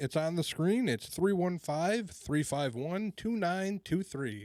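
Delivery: very slow, formal, official sports announcer delivery. Reading out the call-in number for viewers: official sports announcer voice. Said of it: "you sounded like an official sports announcer there".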